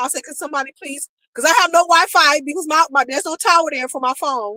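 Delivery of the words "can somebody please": acted crying voice, much quieter. Retelling asking for help at an airport with no phone signal, imitating herself crying. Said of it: "I'm crying".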